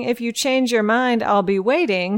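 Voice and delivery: plain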